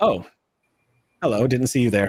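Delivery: offhand, casual, easygoing delivery. Voicing Talison's master greeting the players from a hologram: Talison's master voice. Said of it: "Talison's master sitting on a chair, sipping tea and going".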